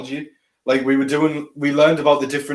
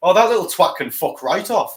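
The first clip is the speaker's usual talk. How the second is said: put-on very strong Scottish accent, higher pitch; 5 semitones higher than usual. Retelling a reply from a voice recording a man sent, in a thick Scottish accent. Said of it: "in the most Scottish accent you can fucking think of".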